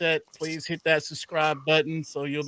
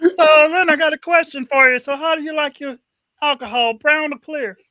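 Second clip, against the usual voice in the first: shrill, very loud, high villain voice; 12 semitones higher, 10 dB louder than usual. Putting a question to leonard about his alcohol while impersonating someone, spot-on impersonation. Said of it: "whoever did that impersonation, that shit was spot on".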